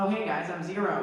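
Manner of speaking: high, nasal animated-character voice, pushed into nose. Explaining how they voice a character, doing the nasal Zero voice. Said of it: "He has like a kind of nasally almost thing".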